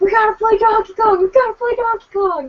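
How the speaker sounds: put-on shrill, very high, childish yelling like a kid screaming. Retelling running home as a child to a dad: retelling a childhood scream. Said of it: "just screaming at my dad".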